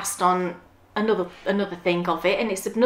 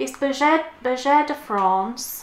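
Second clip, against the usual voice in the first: terrible, clumsy French accent, pitched up; 5 semitones higher than usual. Showing her chosen yarn to viewers, she names the brand: terrible french accent. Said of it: "terrible accent".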